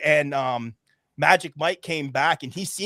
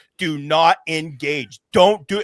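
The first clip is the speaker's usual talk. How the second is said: emphatic insistent voice, louder; 6 dB louder than usual. Retelling a warning to a teammate not to engage: retelling an emphatic warning. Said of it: "And I'm stressing it to him".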